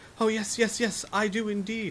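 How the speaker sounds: very high, slow, faltering, eager, excited stutter. A boy, shown a silver ring, answers a question, stammering with excitement. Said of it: "he stammers in excitement".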